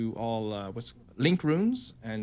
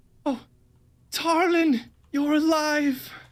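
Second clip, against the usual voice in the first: very high, frantic, panicked relieved cry; 7 dB louder than usual. Voicing a mother bursting from an elevator: panicked relief. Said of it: "a panic state".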